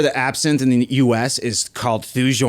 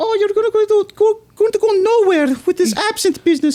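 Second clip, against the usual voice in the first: derisive, scoffing mom voice pitched way up; 4 dB louder than usual. Retelling his mom scolding him about the absinthe business: imitating his mom's voice. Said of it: "Then I'm gonna stop talking like her".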